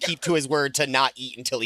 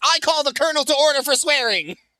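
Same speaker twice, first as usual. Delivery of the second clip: shrill, very high-pitched, loud yell; 13 semitones higher, 5 dB louder than usual. Telling the story of a man who steps two paces out of line, retelling a yell.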